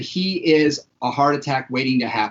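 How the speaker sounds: ordinary talk, nothing marked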